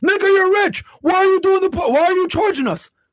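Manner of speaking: very high-pitched, sarcastic griping. Mocking a critic who asks why a rich podcast charges money: mocking a critic's complaint. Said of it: "explain this shit to this fucking dumbass".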